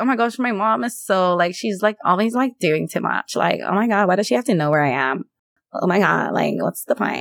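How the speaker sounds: put-on stock, annoying valley girl teen speech. Speaker acts out how her future kids will complain about her: valley girl voice. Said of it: "Why are your kids from the valley?".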